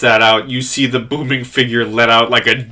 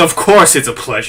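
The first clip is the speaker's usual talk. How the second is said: slightly cocky, a touch of arrogance in voice. Voicing a character answering a greeting, a bit cocky. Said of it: "a bit of cockiness in his voice".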